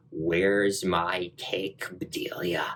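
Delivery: unhinged voice. Describing a voiceover heard as she walks into the cemetery, crazy voice. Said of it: "And it's this crazy voice".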